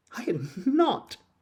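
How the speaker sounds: sharp, very high, furious angry outcry. Narrator reading the Mouse's retort to Alice, sharp and very angry. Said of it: "cried the Mouse, sharply and very angrily".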